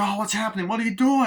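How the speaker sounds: high, rising panicked crying.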